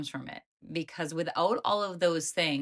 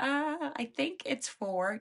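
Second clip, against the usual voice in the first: very high, tiny little squeaky voice; 9 semitones higher, 3 dB quieter than usual. Voicing the horse's little voice during a lesson on 2 + 2: little tiny horse voice. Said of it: "the little tiny voice from your horse that says".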